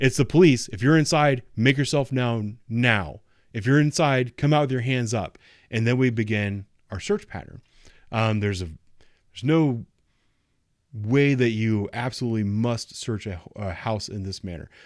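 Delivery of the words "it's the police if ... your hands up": very loud, authoritative, commanding shout. Officer demonstrating announcing police while walking into a building, very loud commanding voice. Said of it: "very loud in a very commanding voice".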